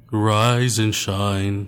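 deep voice, said out loud. Taking a turn doing an impression of Kylie Jenner's wake-up line: deep Kylie Jenner impression. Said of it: "that was deep".

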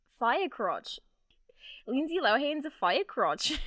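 put-on Australian accent. Asked by another speaker to say a phrase in an australian accent. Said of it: "Can you say fire crotch in an Australian accent?".

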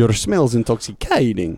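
squeaky, swooping put-on cartoon vampire accent. Trying out a Russian accent for the others: squeaky cartoon vampire accent. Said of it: "the squeak that turns it into like vampire cartoon".

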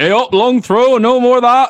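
mock, very high, shrill, loud barked shout. Telling friends what a man keeps shouting, heard rows away: impression of a man shouting. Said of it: "This is an impression".

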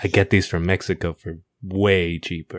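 hushed stage whisper. Acting out a character telling someone a secret: half-whispering. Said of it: "she whispers to him".

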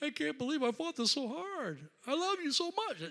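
put-on very high, swooping, blubbering baby-like crying. Retelling finally praying after resisting it: mock crying like a baby. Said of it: "we start crying like a baby going".

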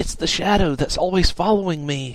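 high, low-key, understated, matter-of-fact tone. A character explains the curse to the others, speaking quietly. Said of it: "Lanta said quietly".

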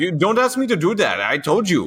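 very high, childlike put-on voice, swooping wildly. Imitating a racing driver refusing to give a place back: Max Verstappen impression. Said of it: "I love your Max impression".

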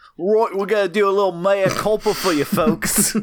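put-on Australian accent. A host, asked by a co-host to use an accent, addresses the folks in an australian accent. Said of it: "can you do a mea culpa with an accent?".

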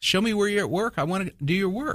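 high-pitched, taunting, goading voice. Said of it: "speak to God almost like in a taunting way".

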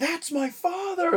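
piercing, very high, shrieking scream. Imitating a villain screaming at others: imitating Ego screaming. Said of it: "screaming at them".

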